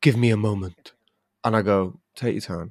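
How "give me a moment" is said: put-on male voice, Cypriot accent. Telling about reaching his seat in the row, quoting the man there, imitating a Cypriot man. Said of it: "Cypriot man, he goes".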